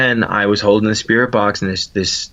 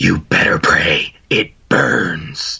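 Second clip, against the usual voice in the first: very slow, eerie, menacing ghostly voice; 3 semitones lower than usual. Retelling a voice heard on a ghost recorder: imitating a creepy spirit voice. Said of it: "I love the voices you make".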